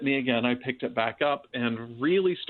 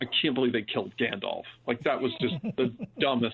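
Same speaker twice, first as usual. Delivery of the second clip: muttered, grumbling, disbelieving complaint under breath. Retelling what the youngest child kept saying: imitating someone muttering under breath. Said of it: "muttering under her breath".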